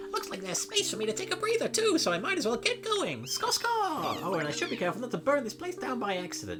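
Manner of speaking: very high, loud, swooping cartoon rabbit voice. Voicing the Pokémon Scorbunny, in a high-pitched Bugs Bunny voice. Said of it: "I'm just doing a high-pitched Bugs Bunny".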